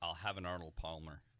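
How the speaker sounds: quick, fast, rattled-off delivery. Showing how to say a restaurant order quickly, said fast. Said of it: "Say it fast".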